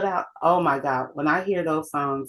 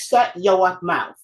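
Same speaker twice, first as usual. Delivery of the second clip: put-on slow, drawn-out New England accent. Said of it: "That New England accent was always there".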